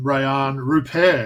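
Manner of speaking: pronounced with a French accent. Speaker names his second-round choice, saying the name in a french accent. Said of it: "pronouncing that well in that French accent".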